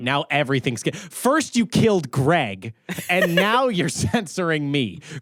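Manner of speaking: heated, mad, angry outburst. Complaining that the others killed Greg and are censoring him: angry. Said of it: "Why are you so angry?".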